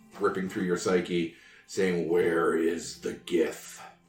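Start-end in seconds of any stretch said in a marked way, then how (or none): 2.1-3.8 low, creepy, crawly monster voice. Voicing a telepathic message that two listeners hear in their minds: creepy, crawly mind flayer voice. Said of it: "the creepy, crawly voice of a mind flayer".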